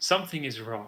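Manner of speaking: hushed half-whisper, close to the ear. Voicing the matriarch half-whispering into a player's ear: half-whispering. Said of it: "the matriarch whispers into your ears".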